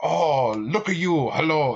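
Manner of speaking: bad, exaggerated caricature of a Japanese accent. Describing a game character's voice to the others, imitating its stereotypically bad accent. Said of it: "His fucking voice is like like every every stereotypically bad".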